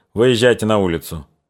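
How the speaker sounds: ordinary delivery, nothing marked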